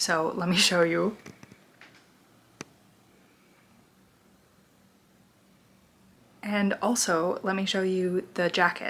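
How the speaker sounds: speaking in a whisper. Showing viewers a jacket while someone is tucked into bed: whispering. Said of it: "I'm whispering because Newt has tucked herself into bed".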